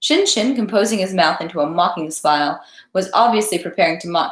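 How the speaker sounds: plain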